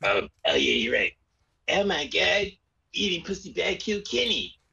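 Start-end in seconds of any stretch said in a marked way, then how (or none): 1.7-4.5 higher, cartoonish put-on voice. Prompted by a friend to do the voice, the speaker obliges in the carpet voice. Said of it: "Gotta do the carpet voice".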